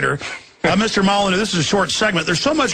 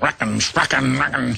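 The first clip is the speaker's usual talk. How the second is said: low, rough cartoon cowboy grumble; 5 semitones lower than usual. Speaker offers a Yosemite Sam imitation and gets into character: Yosemite Sam impression. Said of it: "I have to get into character to do that".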